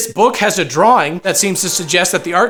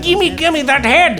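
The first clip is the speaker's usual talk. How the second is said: put-on German accent, higher; 8 semitones higher than usual. Retelling a movie scene, voicing a weird German man: imitating a German accent. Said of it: "a weird German man shows up".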